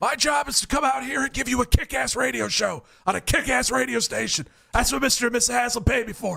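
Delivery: raspy, rough voice, pitched a bit high. Speaker imitates Todd Monken for a montage, Todd Monken raspy voice. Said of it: "You even got the raspy voice down".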